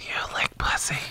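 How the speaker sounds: hushed, breathy whisper. Retelling what he asked callers on the air, imitating a whisper. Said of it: "he's whispering and like".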